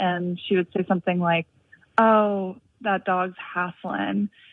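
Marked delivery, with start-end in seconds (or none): 2.0-4.3 put-on Southern accent, much slower. Quoting a woman remarking on a panting dog, in her Southern accent. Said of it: "in her Southern accent".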